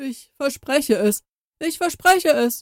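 high, groaning plea. A ghost, held at swordpoint, gives his answer, groaning. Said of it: "stöhnte der Geist".

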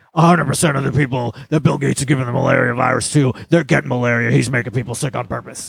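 rough, creaky put-on voice with roughened tone. Retelling a podcast claim about vaccines: Alex Jones impersonation. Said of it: "I love your impersonation".

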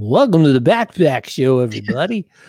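loud, fake radio announcer voice. Starting an episode of the show, the speaker slips into a fake radio announcer voice. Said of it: "fake radio announcer voice".

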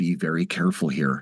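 mumbled under breath. Retelling what a woman being questioned muttered into a hot mic, muttered aside. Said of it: "She actually muttered into the hot mic".

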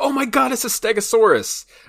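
mock shrieking scream, very high-pitched and loud. Reminding a coworker of their outburst at an after-hours screening, retelling a coworker's scream. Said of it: "jumped out of your seat and screamed".

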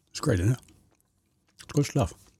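speech through a mouthful. Speaker talks to listeners while eating chocolate ice cream: talking with mouth full. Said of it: "Now I got a mouthful of chocolate ice cream".

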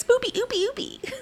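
really cute, sweet-sounding, cutesy little voice. Asking if the men want it in a really cute voice. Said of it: "in a really cute voice, like".

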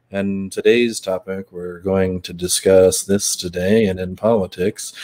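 boring, droning, flat and slow monotone voice. Explaining how a monotone speaker bores listeners: boring monotone voice. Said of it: "that guy's got a really monotone voice".

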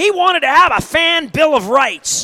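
high, indignant, ranting sports-radio voice. Speaker recalling a former radio colleague, doing a Papa Joe Chevalier voice. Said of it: "he had a voice like this".

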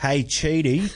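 Australian accent, laid on for show. Talking about a show's characters, greeting one in a great Australian accent. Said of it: "this is my great Australian accent".

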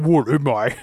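put-on, very deep, low bass voice. Imitating how he reads the line: put-on very deep voice. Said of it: "He's got a deep voice. He's like".

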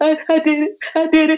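high, tearful voice, words pushed out through crying. Retelling a phone call made while crying after the drive: imitating own past crying. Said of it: "I was crying".

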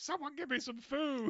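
acted-out, very high-pitched yell. Retelling a scene where a character pours his own coffee: imitating someone yelling. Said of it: "yelling and just, like, being like".

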